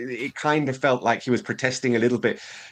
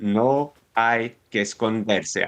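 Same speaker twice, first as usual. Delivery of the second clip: much slower, slowed-down delivery. Speaker quotes a man repeating his words in an interview, retelling a slower repeat.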